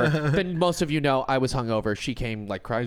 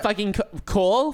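put-on Long Island-accented speech; 6 semitones higher than usual. Imitating how the speaker always makes her sound, exaggerated Long Island accent. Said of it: "She just sounds like a Kardashian from Long Island. That's what I make her sound like".

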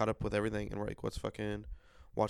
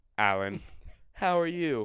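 mechanical, machine-like delivery; 3 semitones higher, 7 dB louder than usual. Acting out a planned morning video message: imitating a robotic voice. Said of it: "it's gonna be a robotic voice".

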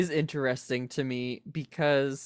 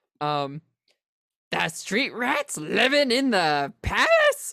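cartoon parrot voice, much higher; 6 semitones higher than usual. Asked to do their best Iago, speaker quotes the parrot in an Iago voice. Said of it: "Do you want me to do my best Iago?".

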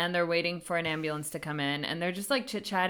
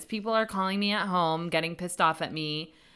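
plain

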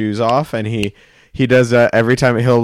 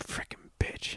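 mutter under breath, much quieter. Retelling what they said while walking away: muttered under breath. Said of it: "as I walked away under my breath".

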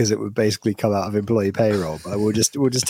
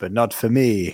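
acted elderly man's voice. Retelling the meme's punchline where the old man pulls a gun: put-on old man voice. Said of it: "And then the old man goes".

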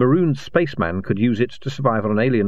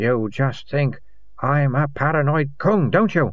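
sulky, petulant, pouting, wounded tone; 4 semitones higher than usual. A man speaks to his companion after his ranting fades, sulky. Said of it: "he said sulkily".

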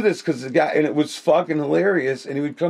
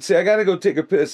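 acted-out, loud, projected, announcer-like delivery; 3 semitones higher than usual. Retelling a man's remark, said so everyone at the other tables hears: loud. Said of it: "he would say it nice and loud".

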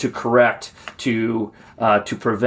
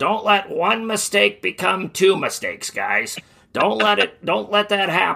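put-on gravelly voice, pitched higher; 9 semitones higher than usual. Recalling his first coach's advice to the team, in Coach Nacky's gravelly old voice. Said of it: "in his gravelly old voice".

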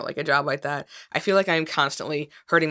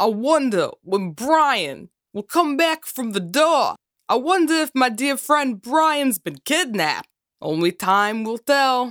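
loud, high-pitched, pushed generic New York Jersey accent; 8 semitones higher, 5 dB louder than usual. Announcing his impersonation, the speaker wonders about his friend at the door: failed Christopher Walken impression. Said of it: "like New Yorker, like Jersey accent".

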